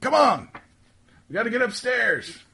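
very high, loud shouted call. Telling a story, the speaker acts out another guy calling to Archie, retelling a yell. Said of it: "you hear the other guy yell".

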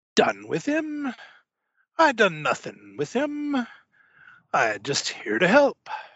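theatrical stage-pirate dialect, slow and swooping. Voicing a theatrical pirate stranger answering the player who slapped the captain; stage pirate voice. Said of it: "He is dressed not as a pirate, not even as a pirate captain, but maybe as you would see a pirate captain dressed in a theater play. He has a peg leg. One of his hands is missing and he ... I be just a lowly adventurer and traveler such as yourselves. ... Dat der coin".

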